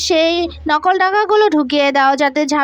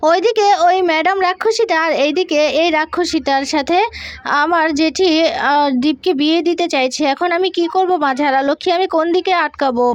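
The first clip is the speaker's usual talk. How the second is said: usual speaking voice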